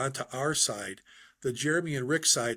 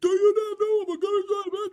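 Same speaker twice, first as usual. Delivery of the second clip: shrill, in-your-face scream, very high and loud; 6 dB louder than usual. Telling Jeremy how a gunnery sergeant got in a kid's face: retelling a gunny's screaming. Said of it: "And he's screaming".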